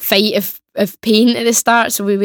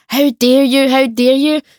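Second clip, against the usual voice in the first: put-on scandalised, indignant old man scolding, screaming; 4 semitones higher than usual. Retelling an elderly man who came round the corner: imitating an old man screaming. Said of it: "starts screaming at us, like, shouting at us".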